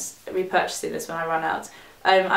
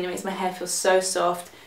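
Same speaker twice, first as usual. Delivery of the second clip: ordinary talk, nothing marked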